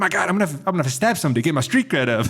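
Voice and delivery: put-on comic voice, pitched high. Imagining Chris Rock's reaction to a ranking: Chris Rock impression. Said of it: "Chris Rock's like in his voice like".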